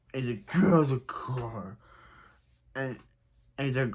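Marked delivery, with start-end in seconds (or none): 0.5-1.8 angry, covered, disguised masked-hero voice. Retelling how a character talks when angry, doing his Batman impression. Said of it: "His covering his voice is his Batman impression".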